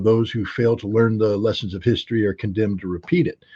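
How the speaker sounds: plain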